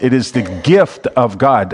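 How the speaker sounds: "gift" heavily stressed and stretched out. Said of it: "I'm emphasizing gift here".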